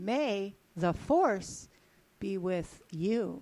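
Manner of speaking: very slow, seductive, sexy delivery. Saying a movie line when asked to say it sexy: sexy delivery. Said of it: "That's sexy".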